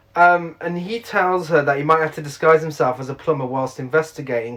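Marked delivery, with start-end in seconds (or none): none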